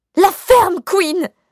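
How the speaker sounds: very high, very loud yelling shout. Arguing in front of the notary, the narrator yells back at the other, shouting even louder. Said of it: "Criai-je encore plus fort".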